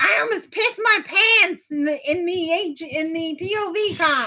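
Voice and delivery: put-on high, slow, drawn-out baby voice. Imitating a houseguest talking in the Nook: Shania baby voice. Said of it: "You do your baby voice".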